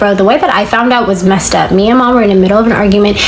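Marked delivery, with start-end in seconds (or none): none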